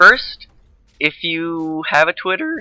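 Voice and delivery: voice breaks mid-phrase, cracking up high. Speaker addresses listeners, voice cracking mid-sentence. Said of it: "my voice just cracked".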